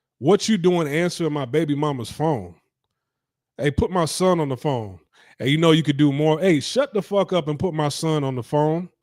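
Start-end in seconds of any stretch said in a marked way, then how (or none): none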